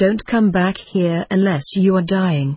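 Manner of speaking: plain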